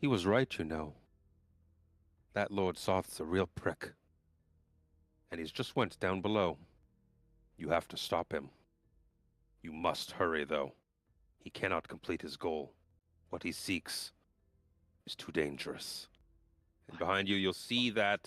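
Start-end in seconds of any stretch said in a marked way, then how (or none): 0.0-16.1 mild, kind, gentle tone. Narrating a scene to players, voicing someone behind them: gentle voice. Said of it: "gentle voice".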